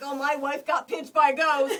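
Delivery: laughing. Retelling how a husband reacted to his wife's pinch: imitating someone laughing. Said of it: "he was laughing".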